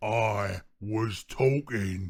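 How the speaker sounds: growling orc voice from the chest. Narrating an orc speaking to Daemira, growling. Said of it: "the orc growled".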